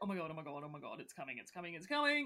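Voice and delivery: low, nervous, jittery, on-edge panic, repeated. Retelling a man reacting to a girl walking past, acting out someone on edge. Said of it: "he is so on edge".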